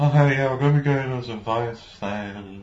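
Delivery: acted, utterly bored, uninterested voice. Speaker complains about a character's delivery, imitating Tifa sounding bored. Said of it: "Tifa sounds so bored".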